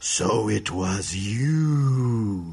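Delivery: deep, very slow furious monster voice, "you" drawn out. Voicing a water creature holding a seashell: angrier creature voice. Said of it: "gets even angrier and says".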